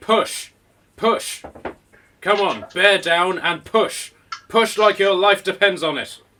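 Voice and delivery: very loud, high, insistent, urgent shouting. Voicing a woman inside a house during a birth: woman shouting push. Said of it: "she's basically shouting".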